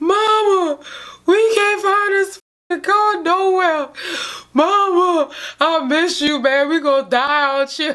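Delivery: put-on high, slow tearful crying, "mama" drawn out. Retelling a lost friend's phone call to his mother: imitating someone crying. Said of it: "he crying".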